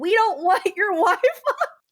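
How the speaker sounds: very high, slow, drawn-out yell. Retelling a woman yelling at a man at the door, imitating someone yelling. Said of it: "she starts yelling".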